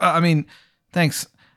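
high, slow, voice cracking on every word. Voicing a nervous character thanking someone: voice cracking on every word. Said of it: "his voice cracks on every single word".

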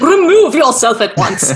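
put-on horrified, scandalized old victorian lady voice, swooping pitch. Repeating another speaker's line in the voice just described: mock-shocked old Victorian woman. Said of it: "You sound like a shocked and horrified, like old Victorian woman".

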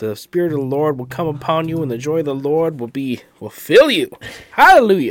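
fake Southern preacher accent. Speaker mimics a preacher's sermon for a co-host, in a put-on Southern accent. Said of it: "I like throwing that Southern accent on it".

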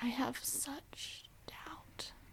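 hushed, slow, breathy, barely voiced delivery. Trying the same line after another speaker: Meryl Streep impression. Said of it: "Can you do a Meryl Streep impression?".

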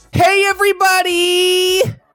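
very high feminine voice, pitched two octaves up. Greeting everybody to open the video, in a voice up two octaves. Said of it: "go up 2 octaves".

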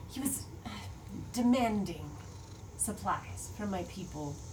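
put-on lizard-woman character voice. Narrator voices the lizard lady answering the player's question, Thetsis voice. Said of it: "And then what's the lizard lady's name? [name]. What was going on with that situation? Yeah, you can definitely talk to her. Yes, I would like to ask her. So she's kind of like brushing the muck off of her".

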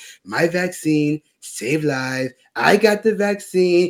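very slow put-on voice, every word drawn out. Describing a planned impression of a public figure: Trump impression. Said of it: "I was going to do the Trump impression where it's like".

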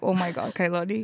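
ordinary delivery

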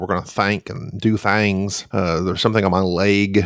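easygoing, understated voice with slight twang. Showing how the absent co-host talks: Jerry impression with a twang. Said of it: "That's what Jerry would say".

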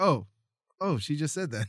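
plain

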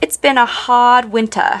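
put-on non-rhotic British accent. Explaining non-rhotic accents and showing how a Brit would say it: British non-rhotic accent. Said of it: "a Brit would say".

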